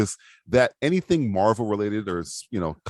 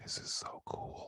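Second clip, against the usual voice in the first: very soft, very slow, hushed whisper. Retelling what a sister said during a movie: imitating a whisper. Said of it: "she just whispers over".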